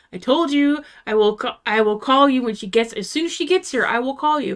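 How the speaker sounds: mock-firm, insistent tone. Retelling what the woman told her while she waited, mock-firm. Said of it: "she said it so firmly".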